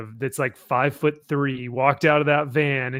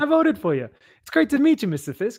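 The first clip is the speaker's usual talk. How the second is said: high, swooping voice drifting upward; 9 semitones higher than usual. Retelling a voter greeting the man he voted for, voice going higher. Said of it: "his his voice gets higher".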